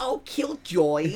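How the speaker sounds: very high, silly, goofy cartoon-girl voice. Retelling a clown movie character's line: imitating a goofy little voice. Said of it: "she has a goofy little voice".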